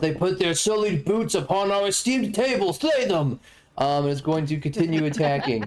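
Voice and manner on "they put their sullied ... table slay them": high, accusing yell. Voicing a revenant commanding its allies during a game fight, yelling. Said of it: "finger and yells".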